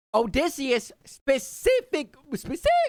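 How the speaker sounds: cracked, breaking voice. After talking for an hour straight about Odysseus, the speaker's voice cracks. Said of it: "my voice cracked".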